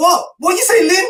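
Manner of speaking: put-on very high-pitched shout, loud for everyone. Retelling how he shouted back in front of everybody, retelling a shout. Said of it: "he's shouting".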